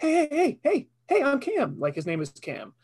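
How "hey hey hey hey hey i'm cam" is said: very high, goofy, cheerful happy dog voice. Answering what voice is given to a pet dog: happy goofy dog voice. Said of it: "What voice do you give your dog?".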